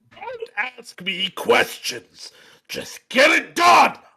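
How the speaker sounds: even angrier, slow, high, furious character voice. Reading a character's line as he gets even angrier: angry character voice. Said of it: "Night Shadow then got even angrier".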